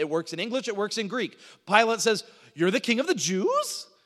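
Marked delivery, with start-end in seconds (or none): 2.5-3.8 statement with rising intonation on one word. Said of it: "a way you can ask a question is by making a statement".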